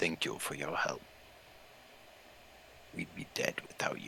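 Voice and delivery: breathy, very quiet, low, hushed near-growl. Voicing a shifter thanking the group for their help, low, almost growling tone. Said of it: "they speak in this low tone that's almost a growl".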